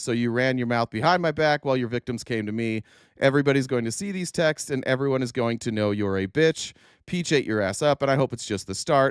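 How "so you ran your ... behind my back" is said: ordinary delivery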